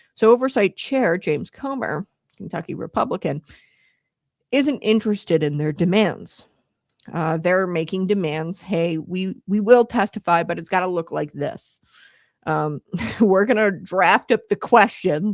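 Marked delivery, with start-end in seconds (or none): none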